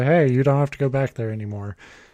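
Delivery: ordinary talk, nothing marked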